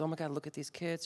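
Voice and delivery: mock tearful voice. Retelling what mom said while watching the news: imitating mom crying. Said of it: "she's crying".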